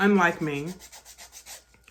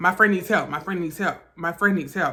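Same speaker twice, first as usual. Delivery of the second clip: ordinary talk, nothing marked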